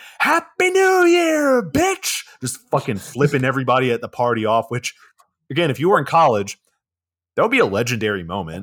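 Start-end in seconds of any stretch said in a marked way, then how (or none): 0.2-2.2 put-on shrill, very high, stretched-out, drawn-out screaming. Retelling a movie scene as Tessa is carried upstairs: Tessa screaming. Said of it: "as Tessa's just screaming".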